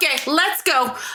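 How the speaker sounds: shrill, very high-pitched yelling. Retelling telling drunk moviegoers to leave: retelling a yell. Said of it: "yelling at 'em".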